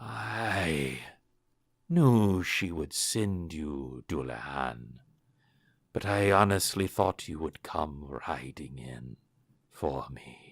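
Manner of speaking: rasping, hoarse voice with a drawn-out I. A stiffening figure in a headscarf speaks to dullahan, raspy voice. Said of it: "you hear a raspy voice say".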